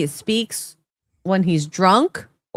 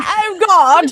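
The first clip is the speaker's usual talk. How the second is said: high, loud mock Scottish accent. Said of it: "We're making the Scotch accent".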